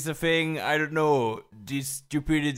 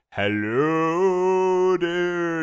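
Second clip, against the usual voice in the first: spooky, eerie voice, pitched higher; 3 semitones higher than usual. Showing how a Halloween greeting should sound: spooky voice. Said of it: "a more spooky kind of voice".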